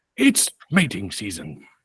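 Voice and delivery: low, soft nature-documentary narrator murmur. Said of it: "that's my Richard At-, Attenborough".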